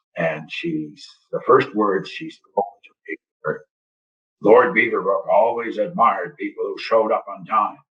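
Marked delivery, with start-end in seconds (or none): 4.4-7.7 play-acted, very stern, no-nonsense voice. Retelling a woman's first words to him at the door: imitating a very stern voice. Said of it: "said in this very stern voice".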